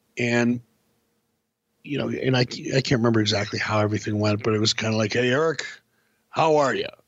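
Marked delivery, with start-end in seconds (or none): 5.2-6.9 put-on baritone voice. Recalling how he greeted Eric, doing a Vince baritone impression. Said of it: "in that Vince baritone".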